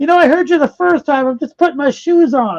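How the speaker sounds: put-on irritated centipede voice. Telling a joke, voicing the centipede answering the knocking, mock-angry. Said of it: "the centipede is so pissed off".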